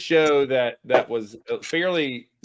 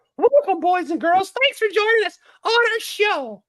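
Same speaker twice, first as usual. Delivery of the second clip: pitch going way up high, cartoon-style; 3 dB louder than usual. Showing off character voices to others: Mickey Mouse voice. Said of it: "And here's my Mickey".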